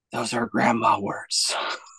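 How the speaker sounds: soft, hushed, barely voiced whisper. Retelling a movie scene where parents lean in to a girl: imitating a whisper. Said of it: "lean in and they whisper to her".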